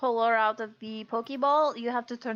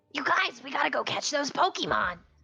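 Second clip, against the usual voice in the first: swooping, animated, rousing cartoon-hero voice with swinging pitch; 3 semitones higher than usual. Playing a character made to talk like Ash Ketchum: Ash Ketchum voice. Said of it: "Val has to talk like your Ash Ketchum character".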